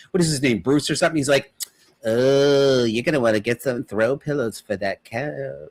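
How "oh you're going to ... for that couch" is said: stretched, drawn-out "oh". Describing a Family Guy cutaway character, doing a Bruce from Family Guy impression.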